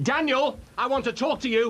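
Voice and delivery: angry agitated voice. Calling another character in to confront him: angry, needs to calm down. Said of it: "Ollie, calm down".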